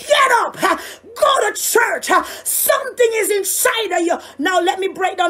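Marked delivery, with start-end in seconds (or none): 0.0-4.2 loud screaming, yelled out. Addressing listeners and telling them to go to church, yelling. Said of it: "I'm yelling".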